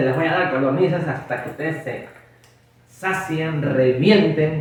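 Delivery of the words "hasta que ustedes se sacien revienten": normal talking voice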